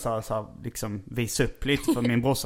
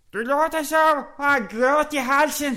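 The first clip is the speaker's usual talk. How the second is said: put-on Chinese accent, much higher; 5 dB louder than usual. Trying to imitate a woman's Chinese accent among friends: imitating her Chinese accent. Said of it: "hennes kinesiska dialekt, men jag ska göra ett försök".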